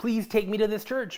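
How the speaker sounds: put-on high-pitched, begging, pleading child's voice. Retelling begging parents as a child: imitating own childhood begging. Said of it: "I begged my dad and my mom".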